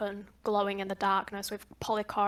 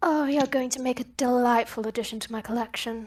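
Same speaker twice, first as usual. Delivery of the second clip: smooth, silky woman's whisper, higher pitch; 3 semitones higher, 4 dB louder than usual. Narrator voicing a woman whispering in the listener's ear: smooth whispering woman's voice. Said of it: "A very smooth voice of a woman whispers in your ear".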